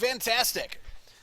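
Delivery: far too enthusiastic, high-pitched, loud over-eager cheer.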